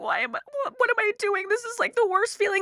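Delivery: put-on crying. Recalling hiding in a back room on the phone with mom, retelling crying on the phone. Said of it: "on the phone with my mom crying and saying like".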